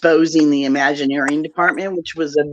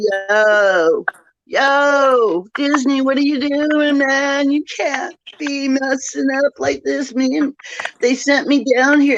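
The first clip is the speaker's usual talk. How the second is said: high, unhurried statue voice, long drawn-out yo; 10 semitones higher than usual. Retelling talking to Disney through an animated Dopey statue: retelling own voice for Dopey statue. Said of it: "and I'm talking like this".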